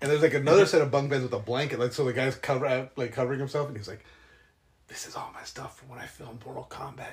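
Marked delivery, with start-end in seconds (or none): 4.9-7.1 hushed, secretive whisper, very quiet and barely voiced. Retelling how a man showed off his stuff: imitating someone whispering.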